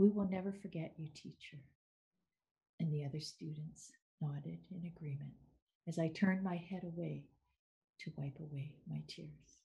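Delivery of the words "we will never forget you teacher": put-on gentle voice. Recalling a student's farewell words to the teacher, retelling them gently. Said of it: "His voice was gentle as he said the words".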